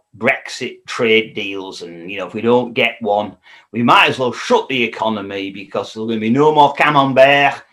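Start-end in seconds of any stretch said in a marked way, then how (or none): 6.7-7.6 camembert said lightly with French pronunciation. Talking about Brexit trade deals, saying camembert with a bit of French accent. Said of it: "I tried a bit of French accent there".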